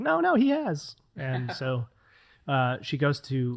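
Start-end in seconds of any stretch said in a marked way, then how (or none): 0.0-1.0 put-on very high, squeaky baby squirrel voice. Retelling a story, voicing a little baby squirrel; baby squirrel voice. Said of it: "Good voice acting".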